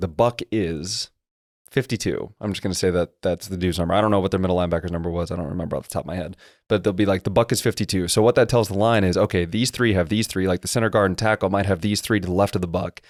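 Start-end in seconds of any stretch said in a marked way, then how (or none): 0.0-2.3 slow, deliberate, spaced-out delivery with a pause. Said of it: "he's saying".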